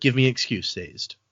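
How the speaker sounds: ordinary talk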